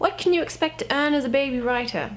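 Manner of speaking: best-effort British accent. Answering Andre's question as he requested, in a British accent. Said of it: "He asked me to speak in a British accent, so I will do my best".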